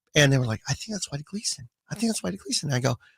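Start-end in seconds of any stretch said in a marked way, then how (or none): 0.7-2.7 hushed, high whisper under the breath. Retelling guys at a game recognizing someone: imitating whispering strangers. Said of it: "That was my whispering impression".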